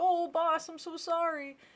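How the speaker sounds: high, drawn-out cartoon henchman voice. Acting out henchmen apologizing to their boss: cartoonish henchman apology. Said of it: "and they're like".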